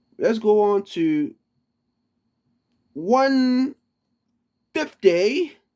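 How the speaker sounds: slow fake British accent, one word drawn out. Announcing the next psalm number to listeners: put-on British accent. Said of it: "Pardon my, uh, my British accent".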